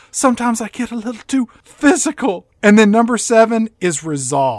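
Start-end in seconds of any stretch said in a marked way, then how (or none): 0.1-2.4 high, rueful, sheepish, remorseful tone, acted out. Retelling a movie scene where she shows regret, imitating regret. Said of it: "Number six is regret".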